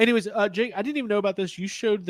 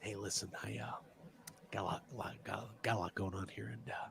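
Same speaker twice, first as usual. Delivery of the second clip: soft, breathy whisper; 11 semitones lower, 18 dB quieter than usual. Showing how a Batman figure would talk: bad Michael Keaton impression. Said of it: "that's my bad Michael Keaton impression".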